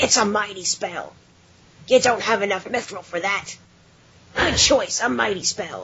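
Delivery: put-on dwarf voice with a New York accent. Quoting a game's dwarf while forging at your base, New York City accent. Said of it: "the dwarf has a New York City accent".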